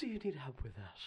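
put-on English accent. In an improvised scene, replying to a plea for help in a Bayonetta voice. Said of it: "That was like my Bayonetta voice".

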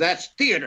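mock bitter tone, woman's voice. Retelling what the boss said about theater: imitating a bitter woman. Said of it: "And just bitter she was".

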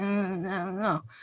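very soft, under-the-breath, very quiet murmur. Speaker recapping a film plot voices Abby, doing a Kristen Stewart impression. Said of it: "really good Kristen Stewart impression".

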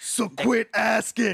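high, slow, loud, drawn-out growl.

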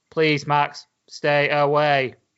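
put-on flat, deadpan monotone. Mocking how an actress delivers her line to Max, imitating a flat monotone. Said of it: "she's literally monotone".

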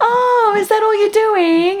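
very high, saccharine, sugary sweet nice-lady voice. Describing how a woman masks her cutting remarks, imitating her in a mock-sweet voice. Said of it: "in this, like, very nice sweet voice".

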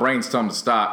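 normal talking voice

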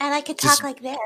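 put-on high, cutesy gamer girl voice. Mocking streamers, the speaker shows how they could talk, in a Twitch gamer girl voice. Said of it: "there is a Twitch gamer girl voice".

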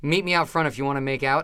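usual speaking voice

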